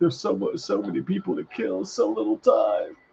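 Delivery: mournful villain voice. Imagining a movie scene, voicing the enemy's line as a sad villain. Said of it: "he's like, sad".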